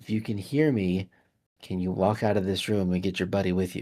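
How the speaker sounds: secretive, low, voiceless hushed half-whisper. Going up to one of them to pass a message in Deep Speech, half-whispering. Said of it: "I'm going to whisper in deep speech".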